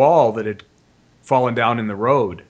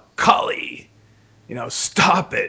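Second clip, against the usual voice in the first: firm, deliberate, loud, drawn-out commanding put-on yell; 4 semitones higher than usual. The speaker re-enacts suddenly calling out to kali, retelling a loud yell. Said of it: "in this really loud voice".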